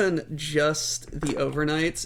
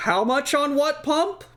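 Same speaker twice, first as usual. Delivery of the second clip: mock raised voice, very high-pitched and louder; 11 semitones higher, 4 dB louder than usual. Retelling talking to someone across a counter, the speaker is speaking a little louder. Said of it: "I just speak a little louder".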